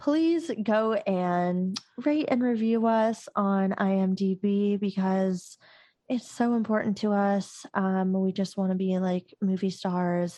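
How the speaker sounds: put-on sexy, sultry-sounding delivery. Co-host doing podcast housekeeping, asking listeners to rate the show, sounding sexual. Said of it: "do you sound so sexual?".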